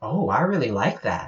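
honest, heartfelt, sincere and genuinely pleased. Showing how tone reveals you really like something, sincere and genuinely pleased. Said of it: "And you can tell I like it".

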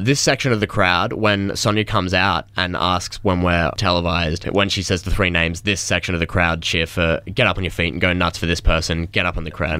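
ordinary delivery

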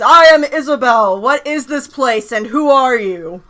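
commanding, proclaiming, declaiming warrior voice. Narrating a scene, voicing an armored woman with morning star and shield: booming Isabel voice. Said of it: "she bellows in this booming voice".

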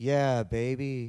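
put-on British spy-spoof voice. Doing a quick example line: Austin Powers voice. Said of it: "That's Austin Powers".

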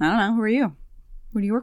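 wary, cagey, guarded, evasive tone. Retelling a character's reply when asked who she is: imitating a guarded reply. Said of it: "being very guarded".

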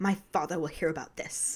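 put-on haughty, snooty, sneering voice. Praising an actor who convincingly played a jerk, quoting his line; mock-haughty sneering voice. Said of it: "And the haughty voice".

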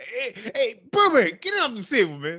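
high, swooping, swinging voice. Quoting how a character tells Burbank to get off the table: Danny impression. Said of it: "how Danny says".

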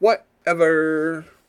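put-on high, offhand, teen-movie style delivery. Quoting the line from Clueless: Alicia Silverstone in Clueless voice. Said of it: "Alicia Silverstone on Clueless. She goes".

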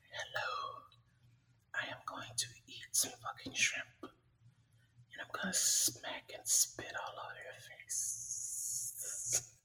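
very slow, breathy ASMR whisper. Joking that the new mic picks up everything: mock asmr voice. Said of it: "sounds like some A S M R shit".

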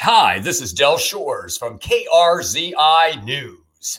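very slow, deep, big radio announcer voice. Showing how announcers talked on radio: deep radio announcer voice. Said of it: "You talk like this".

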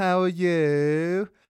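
words stretched out long, loudly. Showing how a group of people talk, dragging the words out: drawn-out mimicked way of talking. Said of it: "they talk kind of like this".

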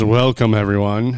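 announcer-style voice. Opening a top ten list to an in-studio audience, in an announcer voice. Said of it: "this is where I get to use my announcing voice".

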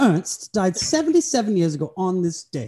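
put-on sort-of English accent. Voicing a woman who can plainly see the visitors: sort of english accent. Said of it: "it's like sort of English".

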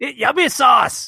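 loud, high, fake North Korean accent. Joking with a co-host about a sauce, in a mock north korean accent. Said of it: "was that your North Korean?".

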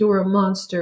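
usual speaking voice

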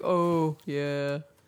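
flat, half-hearted put-on tone. Mocking the other speaker's spoiler warning: imitating a flat, unenthusiastic reply. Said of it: "You sound so enthusiastic about that".

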